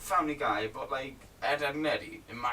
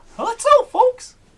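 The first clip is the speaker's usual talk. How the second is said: cartoon voice, much higher and louder; 19 dB louder than usual. Taking turns doing voices as names are called out; Mickey Mouse voice. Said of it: "Mickey Mouse".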